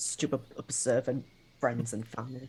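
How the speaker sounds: low, quiet mumble under the breath. Playing a character walking off annoyed: mumbling. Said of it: "just mumbling".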